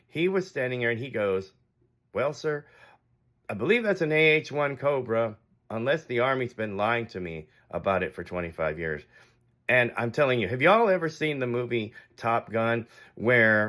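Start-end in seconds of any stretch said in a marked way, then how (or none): 2.2-9.1 very calm, cool, composed, quiet delivery. Retelling the stranger's answer about the helicopter: imitating a calm quiet reply. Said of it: "he just very calmly and quietly".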